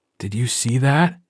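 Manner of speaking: secretive, conspiring half-whispered aside. Reading a story aloud, voicing a boy's line: conspiring half-whisper. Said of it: "in a conspiring whisper".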